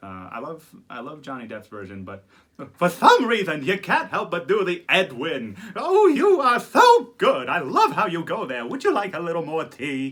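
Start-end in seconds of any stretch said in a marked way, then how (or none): 5.8-10.1 loud, swooping, animated cartoon-character voice. Doing voices of film characters: animated Mad Hatter voice. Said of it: "the animated Mad Hatter".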